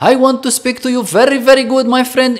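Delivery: Arabic accent on English. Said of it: "você vê um árabe falando inglês".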